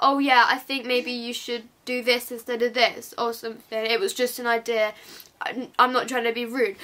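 ordinary talk

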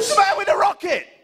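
panicked, frantic yelling.

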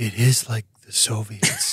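very quiet, hushed and slow. Voicing a character leaning over to another character: very quiet. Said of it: "very quietly says".

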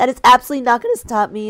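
voice breaking up, cracking on the words. Streamer opening a Genshin Impact session; voice cracking. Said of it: "my voice is already cracking".

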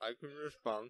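speaking through a mouthful of food, chewing. Teased for having a fry in his mouth, [name] answers while talking with food in mouth. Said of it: "With food in your mouth and you sound like a cow".

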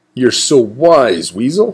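exclaimed, crying outcry. Wombat answers weasel, exclaiming. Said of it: "cried Wombat".

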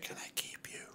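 very soft, breathy whisper. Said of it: "He's fucking whispering in her ear".

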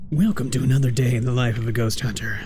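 put-on storybook narrator reading voice. Reading a line about a ghost hunter's day in narrator voice. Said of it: "I'm gonna try to read that in narrator voice here".

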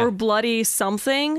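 normal talking voice

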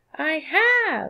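small, high, squeaky voice. Narrator reads the first-person narrator answering a woman, squeaking. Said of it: "I squeaked".

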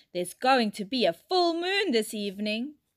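ordinary delivery

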